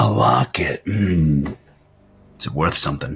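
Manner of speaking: low, menacing, threatening, probing tone. Voicing a smoking stranger questioning a player about a locket: menacing stranger voice. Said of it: "menacingly leaning and smoking and just staring".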